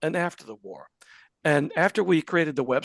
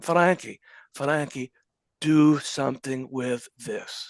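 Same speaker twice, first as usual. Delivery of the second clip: put-on Polish accent in a man's voice. Retelling how a man in a greeting line handed over his speech, quote him in a Polish accent. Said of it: "he says in in Polish accent".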